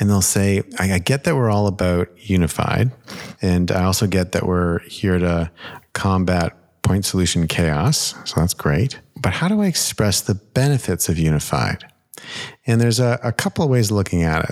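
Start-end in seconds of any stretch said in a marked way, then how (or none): none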